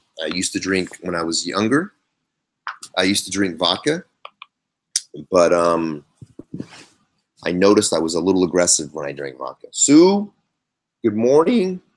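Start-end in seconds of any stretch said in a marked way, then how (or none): 9.7-11.8 voice breaking up, cracking, very high-pitched. Greeting Sue, then apologizing for it: a cracking voice. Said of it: "Excuse my cracking voice".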